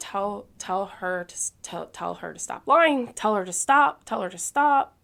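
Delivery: play-acted loud screaming, tripping over repeated words. Retelling screaming at her husband to make someone stop lying: retelling own screaming. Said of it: "I'm screaming at him".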